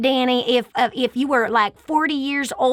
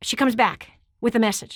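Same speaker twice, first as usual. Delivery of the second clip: normal talking voice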